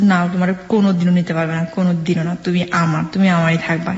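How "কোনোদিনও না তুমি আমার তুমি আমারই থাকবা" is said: ordinary talk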